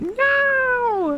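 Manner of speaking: very high mock outcry, squealed out.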